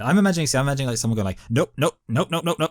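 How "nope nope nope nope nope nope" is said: mock emphatic, insistent, repetitive delivery, pitched up. Imagining how someone would really object, speaker demonstrates: repetitive nope objection. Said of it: "that re- repetitive no".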